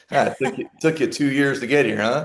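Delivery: dry teasing sarcasm. Retelling own teasing greeting to a scout who finally came: retelling own sarcastic remark. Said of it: "I got a little sarcasm in me".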